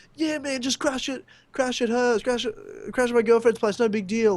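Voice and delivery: high, super-confident, totally self-assured, carefree. Retelling a friend offering his girlfriend's place: imitating a friend sounding super confident. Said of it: "telling us so confidently".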